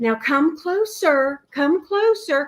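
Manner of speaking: soothing, high, motherly coaxing voice. Retelling that night, the speaker imitates Pat's soothing, mothering voice. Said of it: "start using her soothing, mothering voice".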